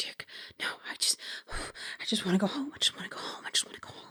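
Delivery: very soft, whispered mutter under the breath. Game master voicing Evan muttering to himself as a player approaches, very soft muttering. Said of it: "muttering in a very soft tone, still visibly shaking".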